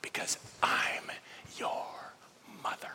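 stubborn motherly whisper.

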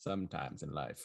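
fake voice drifting into British. Redoing an impression for a guessing game: Matthew McConaughey impression. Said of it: "I sounded British".

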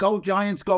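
loud screamed cheering yell. Speaker recalls screaming out the window as a child: retelling a scream. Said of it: "I start screaming".

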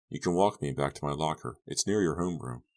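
ordinary delivery, nothing marked

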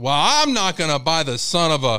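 loud, fed-up yell at full lungs. Speaker acts out a man complaining in an empty store department, imitating someone yelling. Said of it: "he's like yelling at the top".

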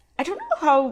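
voice cracking very high and squeaky. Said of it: "I'm squeaking again".

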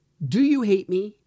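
mock angry, heated, heightened voice, loud and high. Retelling a question put to their son, reenacting a heightened voice. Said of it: "And my voice is heightened".

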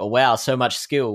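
usual speaking voice

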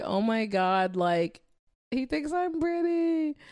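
acted thrilled, gushing, high and swooping. Retelling a guy's reaction to her, the speaker acts out her past self, retelling her excitement. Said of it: "So I was just so excited".

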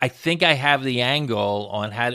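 usual speaking voice

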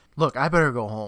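ordinary talk

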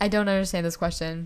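usual speaking voice

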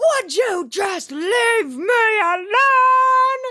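very high, slow, drawn-out, floating falsetto. Retelling a TV scene, quoting a character: Miss Piggy voice. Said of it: "He sounded like Miss Piggy when I did that".

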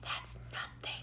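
soft, breathy whisper.

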